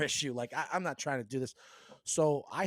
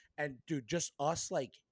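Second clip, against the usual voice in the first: usual speaking voice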